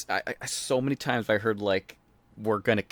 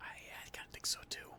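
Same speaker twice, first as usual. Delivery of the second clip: playful put-on whisper, quieter. Agreeing with another speaker about a retirement: whispering as a joke. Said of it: "we're whispering".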